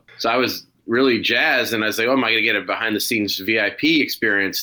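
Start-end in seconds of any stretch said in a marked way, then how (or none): none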